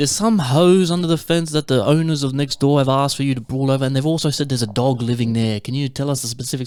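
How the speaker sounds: normal talking voice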